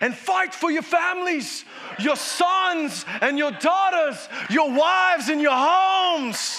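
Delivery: Irish, Scottish or English accent. Quoting Nehemiah's call to fight for families: Irish, Scottish or English accent. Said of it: "an Irish, Scottish, or English accent".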